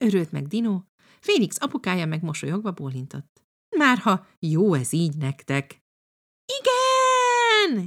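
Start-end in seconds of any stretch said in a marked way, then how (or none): 6.4-7.9 joyful, very high, drawn-out shout. Anni and Dino answer Félix's father's question: happy shout. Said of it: "Kiabálta boldogan Anni és Dino".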